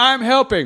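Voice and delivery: play-acted, very high, squeaky drunken voice. Acting out a drunk person at a show: imitating a drunk person. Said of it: "a drunk person being like".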